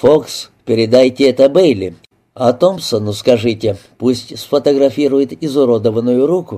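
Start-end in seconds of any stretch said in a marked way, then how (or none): none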